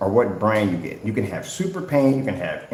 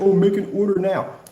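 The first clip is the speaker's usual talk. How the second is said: high, mock whiny, begging tone. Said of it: "you can cry and whine and say".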